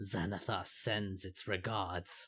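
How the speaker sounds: put-on heavy orc accent, deep, low and gruff. Narrator voices the less damaged Kenku, in a deep orcish accent. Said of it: "they say in a deep voice with an orcish accent".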